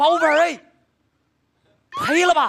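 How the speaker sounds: put-on old Beijing street vendor's cry. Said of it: "您就说这么几句话啊".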